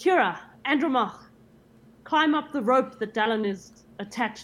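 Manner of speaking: calling out loudly. Player character calling to Kira and Andromach down the corridor, shouting. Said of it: "I'm going to shout".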